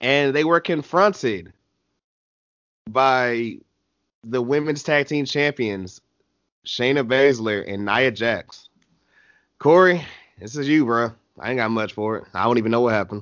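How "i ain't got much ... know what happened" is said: dismissive, low, fast, sighing delivery. Asked by a co-host to cover a segment, answering with a sigh. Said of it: "You sighed and implied it was bad".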